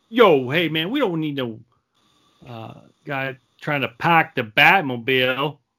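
clumsy, bad, put-on Boston accent. Recalling his past reaction to a casting announcement, in a shitty boston accent. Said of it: "That was my shitty Boston accent".

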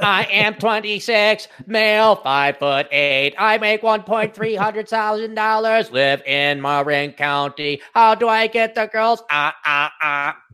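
put-on mechanical, droid-style robot voice. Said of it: "Do the robot voice".

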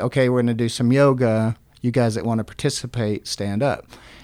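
ordinary talk

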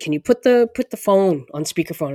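plain

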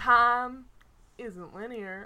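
Southern drawl aiming lazy but staying stiff throughout. Trying the impression once more: Matthew McConaughey impression, not laid back enough. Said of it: "you're not getting as laid back as he would".

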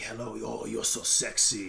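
soft, slow, gravelly, breathy, rough drawl. Showing a tone of voice the speaker loves, a gravelly, breathy voice. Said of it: "this like really almost like gravelly, breathy tone of voice".

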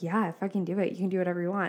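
ordinary talk

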